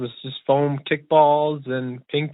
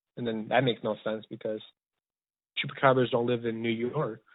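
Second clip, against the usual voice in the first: ordinary talk, nothing marked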